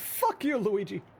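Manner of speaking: very high, pitched way up, cartoonish put-on voice. Swearing at Luigi in the wrong character's voice, a Super Mario voice. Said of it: "I did the I did the Super Mario".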